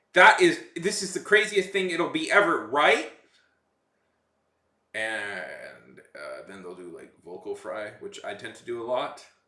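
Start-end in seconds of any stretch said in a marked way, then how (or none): 0.2-3.2 uptalk, rising uptick at the end on "right". Speaker mimics how celebrities talk, using an uptick accent. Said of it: "uptick accent".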